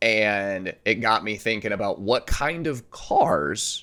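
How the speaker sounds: slow, voice cracking and breaking mid-sentence. Speaker getting straight into a new topic, voice cracking. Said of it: "my voice cracked there".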